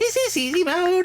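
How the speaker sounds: deliberately bad, very high squeaky voice. Speaker describing a D.Va item's movable guns, doing a D.Va impression. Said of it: "that's my my bad D.Va impression".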